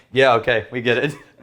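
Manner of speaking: ordinary talk, nothing marked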